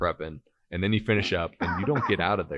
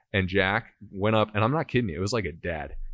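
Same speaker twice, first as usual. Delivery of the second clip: ordinary talk, nothing marked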